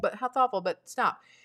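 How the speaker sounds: ordinary talk, nothing marked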